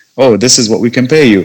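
ordinary talk

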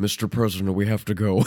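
low, dead-straight deadpan delivery. Imitating an actor kidnapping the president: stone-faced Nicolas Cage impression. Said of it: "totally stone-faced, just being like".

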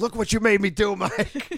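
put-on very high, angry, scolding old-dad-style yelling. Retelling yelling at a friend after punching doors: retelling own yell like an old dad. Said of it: "I was yelling at him like I was, like, some old dad".

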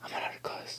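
soft, unvoiced whisper.

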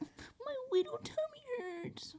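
put-on hushed, drawn-out, tiny, very high baby talk voice. Speaker acts out what they refuse to say to people, in baby talk voice. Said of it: "that's pretty good".

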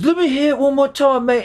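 bad fake Liverpool accent, very high-pitched. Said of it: "not a really good Liverpool accent".

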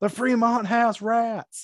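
high-pitched, shrill scream. On a crowded strip, turning back to yell at the Fremont: screaming in Ricky Bobby Senior voice. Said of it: "And I turn back to the Fremont and I scream".

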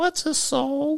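very high, squeaky, mouse-like voice. Reading a story aloud, voicing a small boy asking a question: squeaky voice. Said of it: "Dougie squeaked".

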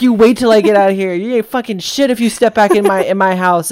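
mock scream. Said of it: "that guy screaming at him".

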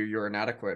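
ordinary delivery

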